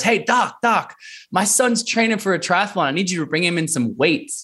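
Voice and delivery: loud yelling.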